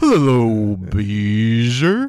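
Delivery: droopy delivery with the name stretched out. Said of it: "I was going for a big bopper like".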